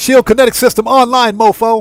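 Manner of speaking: loud, high, big action-hero announcer voice. Repeating the suit's announcement for a joke: Samuel L. Jackson voice. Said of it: "In my Sam Jackson voice".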